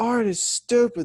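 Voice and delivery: very high, shrill, loud screaming outburst. Retelling how a brother screams at his art project: imitating someone screaming. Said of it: "he is screaming at the paper".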